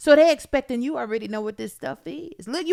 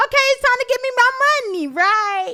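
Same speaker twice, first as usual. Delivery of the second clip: high, fast eager voice. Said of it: "you be thinking".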